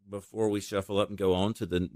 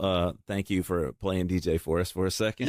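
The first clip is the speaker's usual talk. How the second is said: plain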